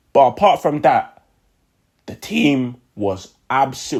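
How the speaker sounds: cracking voice, very slow and drawn out. Praising the team after a big win, voice cracking. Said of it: "why's my voice cracking?".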